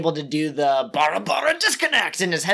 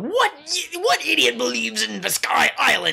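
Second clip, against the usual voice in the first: high, creaky, rough villain voice; 6 semitones higher than usual. Retelling what a character calls out during a fight: Raditz impersonation. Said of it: "that's my best Raditz impersonation".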